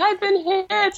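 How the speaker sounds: mock, frantic, panicked, very high-pitched cry. Imagining someone on the phone after being hit by a car, imitating someone saying it frantically. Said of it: "You just imagine someone frantically saying".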